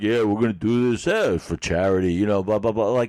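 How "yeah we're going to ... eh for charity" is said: arrogant, puffed-up, swaggering, superior tone. Imitating Rocky Balboa as arrogant in the ring: arrogant Rocky Balboa voice. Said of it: "he's kinda like".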